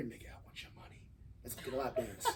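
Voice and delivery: very quiet, breathy, seductive whisper in the ear. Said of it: "she can say it a seductive ass way. She can whisper in my ear".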